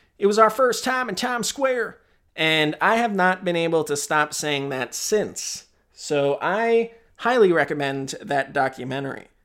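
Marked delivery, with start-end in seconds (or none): 0.2-2.0 put-on heavy Southern accent laid on thick, high and quick. Quoting an assistant from a documentary, in a really thick southern accent. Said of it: "she says in a really thick Southern accent".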